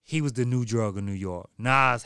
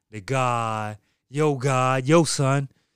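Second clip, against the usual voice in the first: put-on thick, loud, very slow New York accent, drawn-out god; 2 semitones higher, 5 dB louder than usual. Imitating the actors leaning hard on the accent: imitating heavy new york accent. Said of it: "all of 'em leaning on the accent hard".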